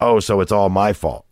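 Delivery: mock-gruff, put-on gruff voice. Speaker retells how their dad answered, imitating dad's gruff reply. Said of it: "My dad just kind of gruffly goes".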